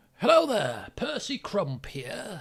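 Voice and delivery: voice of a little ghoul character. Acting out a short ghoul introducing itself, in a short ghoul voice. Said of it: "A ghoul talking like that".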